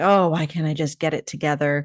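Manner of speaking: ordinary delivery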